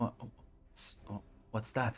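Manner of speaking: trembling voice. A sister answers a stranger offering to bring her brother back; trembling voice. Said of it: "say with like a bit of a trembling voice".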